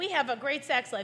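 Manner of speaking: ordinary talk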